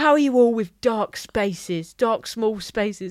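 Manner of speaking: imitated aggressive, intense performer voice. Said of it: "they're very aggressive when they're in character".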